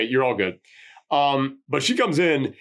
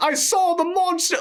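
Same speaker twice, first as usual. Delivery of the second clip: put-on shrieking caricature British accent. Imitating a little lady character who shrieks at everybody, shrieking stereotypical British voice. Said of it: "stereotypical, oh, governor, like kind of British voice".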